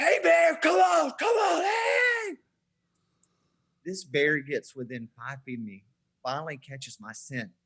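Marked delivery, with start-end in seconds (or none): 0.0-2.4 shrill, loud, high, full-throated, drawn-out screaming. Retelling holding up a log as a bear comes close: retelling a scream at a bear. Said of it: "And I'm screaming".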